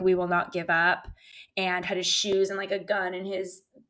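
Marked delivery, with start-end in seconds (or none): none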